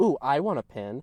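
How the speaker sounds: mock knowing, smug, pleased-with-herself tone. Retelling what a teacher said when asking for a pin: imitating a smug teacher. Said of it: "in this, like, smug way".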